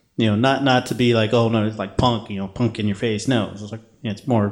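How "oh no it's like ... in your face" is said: ordinary talk, nothing marked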